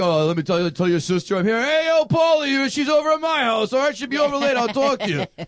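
quirky, scattered, meandering offbeat character voice. Acting out a line from a movie scene: imitating a quirky movie character. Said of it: "he's just so quirky, like".

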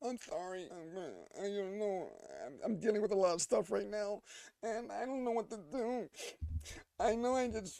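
high-pitched, teary, on the verge of tears. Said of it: "she's like".

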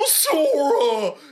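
put-on goofy cartoon dog voice. Joking about wanting to hear a cartoon character call out: Goofy voice. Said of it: "did a dead on Goofy".

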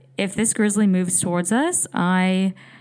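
ordinary delivery

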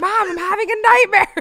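put-on very high, very loud, rising child's scream. Retelling calling to a mother through a baby monitor: imitating screaming as a child. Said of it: "I'd scream at it".

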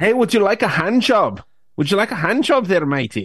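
high-pitched put-on Scottish woman's accent. Speaker shows they can do the Scottish accent as a woman: Scottish woman's accent. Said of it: "That doesn't sound good".

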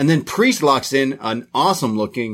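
usual speaking voice

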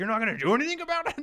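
very high, loud, exasperated, frustrated outburst. Retelling a mad man demanding she do something, imitating a frustrated man. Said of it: "He was like so frustrated".

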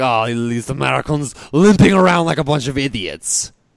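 poor, slow, put-on French accent. Picturing French people watching Americans, in a put-on French accent. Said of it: "that was my best French".

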